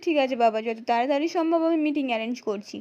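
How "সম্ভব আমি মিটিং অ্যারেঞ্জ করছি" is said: ordinary delivery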